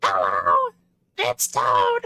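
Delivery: deep, booming character voice, low and swooping. Checking whether he can still do his old character voice, Toad voice. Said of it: "can I still do my Toad voice?".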